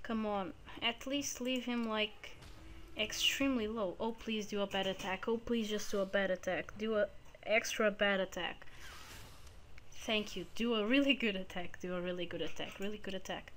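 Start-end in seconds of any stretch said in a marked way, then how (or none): 4.0-8.7 repeated, pleading beg. Streamer playing a game, pleading with the enemy, begging. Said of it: "It was because I was begging".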